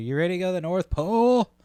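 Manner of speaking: very high, in-your-face screech, acted out. Retelling train performers greeting passengers: imitating someone screaming in your face. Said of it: "all screaming in your face".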